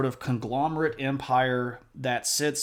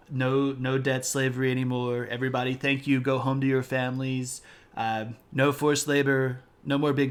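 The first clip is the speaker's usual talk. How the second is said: put-on boastful, bragging politician voice. Doing a requested impression, bragging about accomplishments: Trump impression. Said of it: "we'll do Trump as Lubong for the Han Dynasty".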